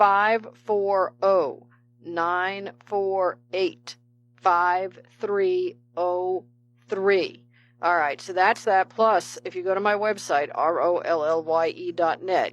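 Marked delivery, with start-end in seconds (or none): 0.0-7.4 carefully spaced-out digits read slowly and deliberately. Repeating a number because people said it was too fast: said slowly. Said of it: "I'll say it slowly this time".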